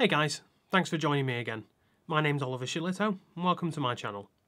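mechanical, robotic, flat monotone delivery. Opening his channel video, the host introduces himself with a robotic delivery. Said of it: "that sounded robotic".

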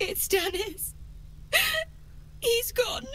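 high, tearful, weeping crying voice. In a game scene, asked why they are crying, a character answers: crying. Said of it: "Why are you crying?".

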